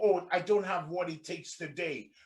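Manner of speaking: ordinary talk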